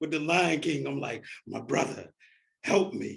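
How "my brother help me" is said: rough voice that cracks, rasps and creaks. Retelling looking to a lifeguard while sliding down: Mufasa on the cliff. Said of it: "my subtext is like Mufasa".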